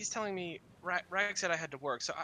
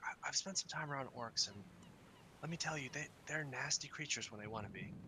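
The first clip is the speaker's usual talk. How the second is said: whisper, lower and quieter; 3 semitones lower, 6 dB quieter than usual. Voicing a character who looks around the hallway first: whispering. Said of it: "sort of starts whispering to you a little bit".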